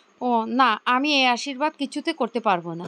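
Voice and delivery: ordinary delivery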